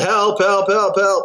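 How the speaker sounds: loud yelling.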